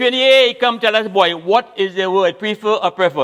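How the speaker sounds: high, loud hollering call.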